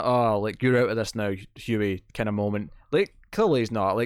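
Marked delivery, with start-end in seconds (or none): none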